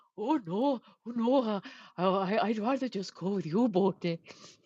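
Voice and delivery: bad, failed Welsh accent, spoken very slowly. Imitating a friend turning down a trip: bad Welsh accent. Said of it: "I can't do the Welsh accent".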